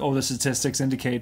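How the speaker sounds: ordinary delivery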